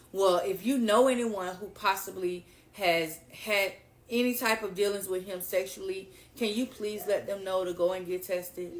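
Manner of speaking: normal talking voice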